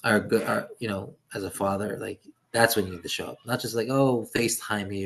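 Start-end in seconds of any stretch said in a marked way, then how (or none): none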